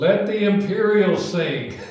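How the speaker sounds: high, booming, drawn-out bellow. Retelling how a voice in the audience called out: imitating a bellow. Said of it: "this voice bellowed out from the audience".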